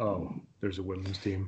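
barely audible, flat, deflated voice, put on. Retelling a typical reaction people give, imitating a deflated response. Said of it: "Like the deflating voice".

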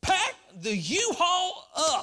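very high, very slow, drawn-out excited yell. Retelling what Casey said at a restaurant table, imitating Casey, mock-excited.

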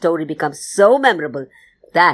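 plain reading voice

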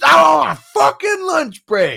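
very loud, very high, shrill, drawn-out scream. Retelling how a man yelled when a little kid came up to say hi: retelling a scream. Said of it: "And he just screams".

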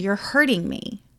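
ordinary talk, nothing marked

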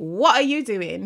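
loud, aggressive, accusatory delivery. Reacting to the other speaker's plans, in an accusatory tone. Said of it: "Accusatory tone".

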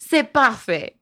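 put-on French accent with Italian touches. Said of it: "That was totally French with a little Italian".

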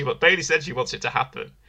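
ordinary delivery

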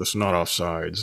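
imitated muttering under breath. Retelling a story about a game, quoting one guy: mimicking a mutter under breath. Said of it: "talking to himself like under his breath".

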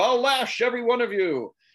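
acted-out shout. Retelling a scene, the speaker voices a character yelling up at a booing crowd: retelling a yell. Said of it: "he yells up".

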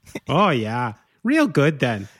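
sing-song, put-on Midwestern accent. Asking the other speaker about talking midwestern, then showing it: midwestern accent. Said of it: "You ever want to talk like you're from the Midwest".

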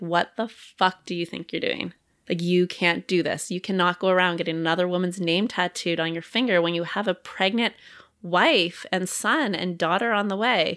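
usual speaking voice

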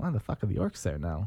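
ordinary delivery, nothing marked

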